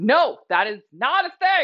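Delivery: full-on loud, slow shout, each word spaced. Speaker rejects a claim someone was told, yelling. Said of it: "Sorry, I'm yelling".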